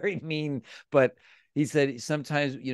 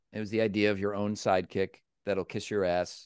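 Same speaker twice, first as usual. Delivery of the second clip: ordinary delivery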